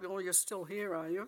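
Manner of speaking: acted growling voice. Recalling Sir Frank passing her in the corridor: Sir Frank's growl, retold.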